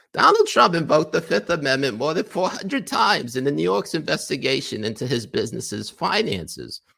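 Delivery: very high, nasally whiny voice, swooping high. Reading a column aloud mockingly: nasally whiny Jen Rubin voice. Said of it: "I feel like I gotta do Jen Rubin voice".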